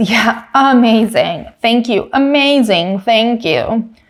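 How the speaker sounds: slow, heavy, laid-on-thick sarcastic delivery. Retelling a driver's radio reply to the engineer: imitating heavy sarcasm. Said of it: "It was heavy with sarcasm".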